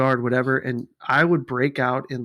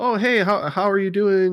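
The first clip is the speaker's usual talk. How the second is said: slow, high put-on Chinese accent; 6 semitones higher, 3 dB louder than usual. Acting out greeting someone in China to start a conversation: Chinese accent impression. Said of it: "It's a Chinese, your voice".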